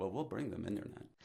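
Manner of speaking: put-on straight-faced tone. Retelling a talk with an ambitious young man, the speaker is imitating a deadpan reply. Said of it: "straight face looked at me and he goes".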